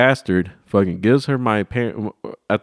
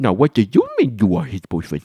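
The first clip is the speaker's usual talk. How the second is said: put-on condescending sing-song baby talk, swooping pitch; 3 semitones higher than usual. Describing how people talk to a baby or a kid, talking like to a baby. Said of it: "when you talk to a, a baby or whatever or a kid".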